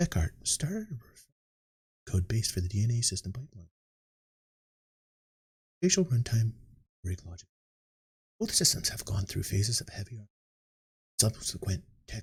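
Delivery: put-on bored, dull, very quiet low reading. Reading patch notes aloud deliberately without fun: put-on boring very quiet reading. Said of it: "I'm talking so low that my microphone isn't even picking me up".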